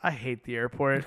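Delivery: acted teary voice, still wet from crying. Retelling a movie character's line after she collects herself: imitating a voice that just cried. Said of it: "with the voice of, like, she's just been crying".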